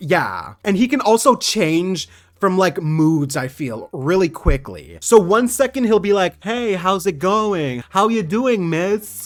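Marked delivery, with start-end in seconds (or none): 6.4-9.3 put-on easygoing, smooth, friendly, charming smooth-talker voice. Imagining a character chatting up a guard during a heist: Kazuzu smooth-talking a guard. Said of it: "Like, chatting up".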